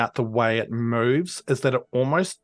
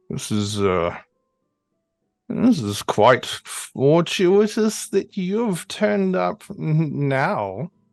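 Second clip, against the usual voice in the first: put-on ancient, parched, dry old voice; 4 semitones higher than usual. Narrator voicing a being that is speaking to you, in an ancient, dry voice. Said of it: "this very ancient, dry voice".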